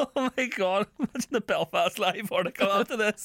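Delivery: crying with laughter. Speaker laughing uncontrollably while recording: crying with laughter. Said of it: "I'm crying".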